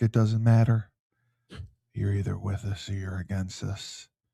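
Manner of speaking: hushed half-whisper, under the breath. A political talk show host addresses the audience, half-whispering. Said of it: "Why are you whispering?".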